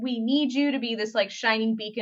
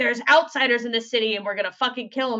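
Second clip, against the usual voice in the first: ordinary talk, nothing marked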